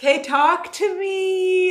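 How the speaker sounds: whiny, plaintive, high, drawn-out whine. Speaking on a live stream, asking viewers to talk back, whining. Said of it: "now I'm whining".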